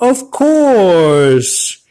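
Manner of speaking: little tough-guy voice, high, swooping, stretched-out. Retelling an industry story, imitating Joe Pesci answering in a high voice. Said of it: "And he said it in a high voice".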